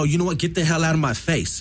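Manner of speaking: ordinary talk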